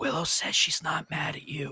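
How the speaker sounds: secretive, confiding stage whisper. Playing a character who leans to a friend's ear: whispering. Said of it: "get up right next to Doros's ear and whisper".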